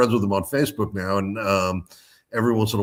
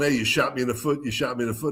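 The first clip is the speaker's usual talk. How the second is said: acted, toned-down mild yelling; 3 semitones higher, 5 dB quieter than usual. Retelling a scene where a shot bakery worker complains: imitating someone yelling. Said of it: "he's yelling".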